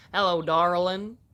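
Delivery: put-on American accent. Asked whether they can do one, a try at an american accent. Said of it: "Can I do an American accent?".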